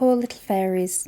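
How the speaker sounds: plain reading voice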